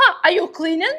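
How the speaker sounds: put-on Russian accent. Retelling a man who walked into their home, in a russian accent. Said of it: "I hear the Russian voice, the Russian guy".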